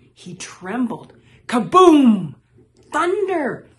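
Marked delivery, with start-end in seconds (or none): 1.5-3.6 shrieking, high, loud scream at full force. Reading a storm scene in a story, a character calls out: screaming. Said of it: "he screamed".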